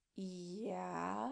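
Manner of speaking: soft "yeah", long and drawn out. Chris admits to the girl that he knows: drawn-out yeah. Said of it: "stretching the word out".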